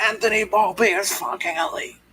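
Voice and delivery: mock very high-pitched shrieking scream. Retelling what the manager screamed at Yankee writers: imitating someone screaming.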